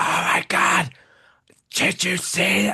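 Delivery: loud, high-pitched stage whisper. Imitating moviegoers who don't know how to whisper: imitating a loud failed whisper. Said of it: "who don't know how to whisper".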